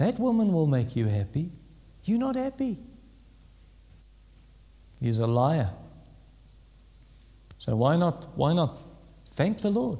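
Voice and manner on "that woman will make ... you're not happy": put-on, tempting, seductive whisper. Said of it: "Satan who whispers to you and says".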